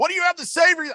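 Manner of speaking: angry, very high-pitched, barking cop voice. Retelling a traffic stop, quoting the state trooper, imitating an angry trooper. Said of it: "you could tell he's steaming".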